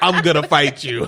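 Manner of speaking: mock blunt, straight-up tone. Retelling a character's threat to another speaker: imitating a straight-up threat. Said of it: "just straight up".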